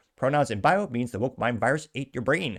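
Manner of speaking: normal talking voice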